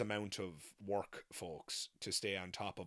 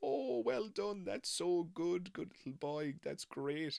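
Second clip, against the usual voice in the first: very high-pitched, mock patronizing, talking-down tone; 10 semitones higher than usual. Retelling how adults praised a child's tricks: imitating a patronizing tone. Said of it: "being patronizing".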